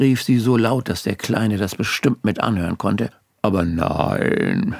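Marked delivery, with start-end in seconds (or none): 3.4-4.7 patronizing, condescending festive voice, lower pitch. On the phone to a worried woman, the speaker answers in a patronizing Christmas voice. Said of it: "sagte ich in meiner gönnerhaften Weihnachtsstimme".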